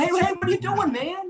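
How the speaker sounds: acted-out very high, scolding yelled call-out. The speaker acts out people yelling at someone kicking a dog, retelling a yell. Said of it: "you'd be screaming and yelling".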